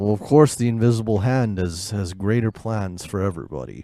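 eerie, unsettling, low creepy delivery. Called on as Mr. Don Callis and told to go ahead, answer in a creepy Don Callis impression. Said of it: "That's really creeping me out".

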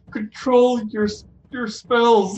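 whimpered, pleading voice. In a tabletop game scene, a character whimpers out an order, whimpering. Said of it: "I'm going to kind of whimper out".

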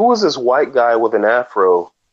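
ordinary talk

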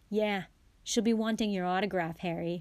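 ordinary talk

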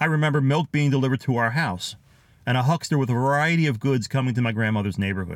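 ordinary talk

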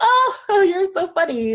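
very high, drawn-out, acted joking chuckle. Retelling her reply to a man's joke about buying an island, retelling her own chuckle. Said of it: "And I chuckled".

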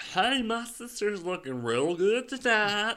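very high, slow put-on Alabama accent, words swallowed. Showing how Alabama people talk: swallowing words, mock Alabama accent. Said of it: "They swallowed their words a little bit".

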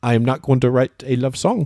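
put-on French Canadian accent. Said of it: "She's French Canadian".

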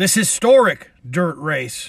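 openly sarcastic, air-quote tone. Show host venting at NASCAR over the Bristol dirt race: sarcastic. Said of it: "I'm being sarcastic".

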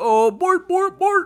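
shrill, booming, squealed gibberish at full blast. Joking about what a Swedish accent sounds like, act out the cook in a Swedish Chef voice. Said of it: "It's like the Swedish chef".

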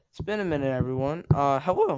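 voice breaking and cracking. Returning to podcasting after a long break, the speaker greets everyone, voice cracking. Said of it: "I just voice cracked".

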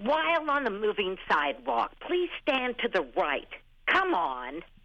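angry, fed-up, high and swooping pitch. Asked to redo the moving sidewalk announcement as if angry, really mad. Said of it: "but as if you were really mad about it".

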